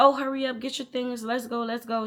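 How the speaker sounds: put-on impatient, harried yelling. Retelling how a late parent rushed her child: imitating mom yelling. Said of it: "She's yelling at Marilyn".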